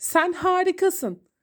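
cheerful, glad delivery with bright lifted pitch. Reading Badem's line to Obur, happily. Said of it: "dedi Badem mutlu bir ifadeyle".

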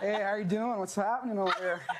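Californian accent. Asked to bust out an American accent, slipping into a Californian accent. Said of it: "can slip right back in my Californian".

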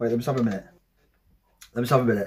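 trembling, unsettled pause.

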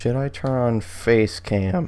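voice cracks and breaks. Speaking to viewers on a stream, voice cracks. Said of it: "voice crack".

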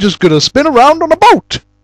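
high, swooping, sing-song character voice. Naming the most annoying video game character, then mocking her in a Sheva impression. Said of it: "That was an impression of Sheva".

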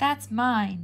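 growling voice. Narrator reads Ben as Sarah starts unwrapping a piece of gum, growled. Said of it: "Ben growled".

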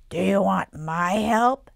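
very loud, strange, gravelly troll voice. A troll on a dresser offers help to a trapped boy, strange gravelly troll voice. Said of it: "a strange, gravelly voice".

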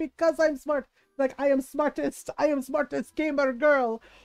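put-on heavy Russian accent in a full man's voice. Act out a guy whose real voice shocks another guy, in a full-dude russian accent. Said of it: "Russian accent was, was like".

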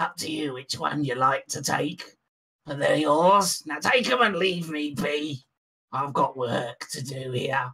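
put-on goblin character voice. A game master voices a goblin speaking to the players, goblin voice. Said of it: "And [name] says".

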